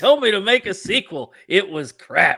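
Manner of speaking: very high, loud, drawn-out belting. Joking about making a sequel: Chris Rock impersonation. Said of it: "that was a pretty good Chris Rock impersonation".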